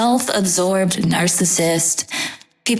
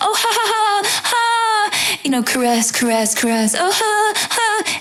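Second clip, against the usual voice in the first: put-on clingy, desperate flirting voice, much higher; 14 semitones higher than usual. Describing a woman chatting up a man, imitating a clingy, desperate flirt. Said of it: "that's my impersonation of a clingy, desperate person".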